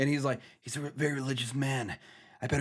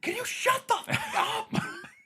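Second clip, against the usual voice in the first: acted very high, long, drawn-out angry holler; 4 dB louder than usual. Imagining a sound recordist during a noisy scene: imitating someone yelling. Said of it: "just yelling".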